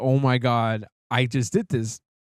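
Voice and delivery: mock-remorseful, acted regret. Retelling what a man said after smashing a SIM card, imitating someone feeling bad. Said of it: "I guess he felt bad afterwards".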